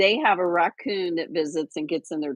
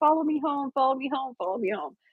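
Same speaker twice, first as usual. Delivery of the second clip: high-pitched mock yell, three times, fading out. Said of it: "I yelled it three times".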